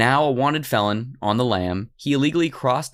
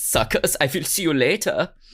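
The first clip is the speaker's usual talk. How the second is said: fake German accent, higher; 4 semitones higher than usual. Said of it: "I don't know why he has a German accent".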